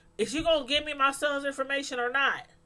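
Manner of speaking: pushy, blunt, aggressive, confrontational delivery. Retelling how a father demanded his son's information: imitating someone talking aggressively. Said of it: "all aggressive".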